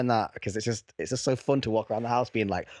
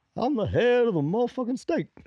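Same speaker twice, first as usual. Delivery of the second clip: very high voice with upward lilting inflection; 12 semitones higher than usual. Joking as a head of state: Obama impression. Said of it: "President Obama".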